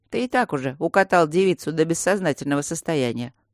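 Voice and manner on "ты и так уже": ordinary delivery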